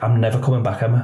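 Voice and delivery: ordinary talk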